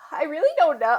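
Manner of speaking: high, acted voice on the edge of crying. Retelling a phone call, answering his question, imitating being almost in tears. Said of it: "Like almost in tears".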